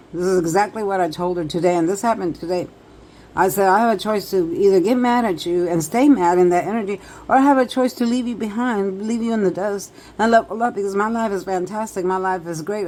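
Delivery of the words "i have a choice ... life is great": plain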